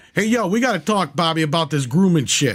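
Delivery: put-on New York Brooklyn accent. Picturing a guy from new york talking, in a brooklyn accent. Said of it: "as if he had like a fucking Brooklyn accent".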